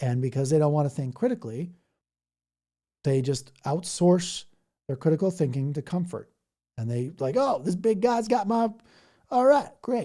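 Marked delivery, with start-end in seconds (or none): 7.4-10.1 full, higher-pitched put-on Tennessee Southern accent. Describing people who outsource their critical thinking, voicing them in a put-on Tennessee accent. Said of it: "I'm sorry if I do the, the whole Tennessee accent".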